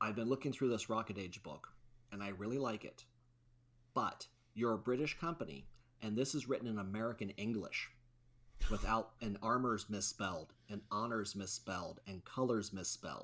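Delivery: ordinary delivery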